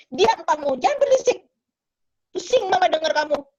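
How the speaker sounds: sharp, snapping tone. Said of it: "mamanya bentak dia".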